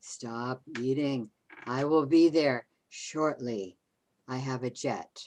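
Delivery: loud, creepy, spooky, scary voice. Judith plays a part that her listener then calls scary; scary voice. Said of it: "That was scary".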